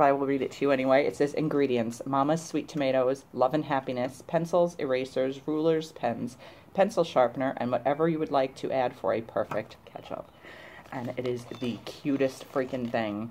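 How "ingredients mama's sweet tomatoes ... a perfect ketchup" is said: normal talking voice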